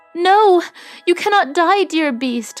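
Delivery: high-pitched cry, exclaiming. Beauty answers the dying beast, crying out. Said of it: "cried Beauty".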